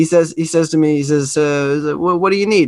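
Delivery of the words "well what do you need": put-on heavily accented English, thick accent, pitched up. Retelling what an old gentleman asked: imitating a thick accent. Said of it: "very thick accent, but in perfect English".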